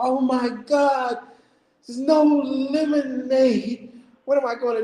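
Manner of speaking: bursting into tears, lemonade drawn out. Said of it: "started busting out crying and like".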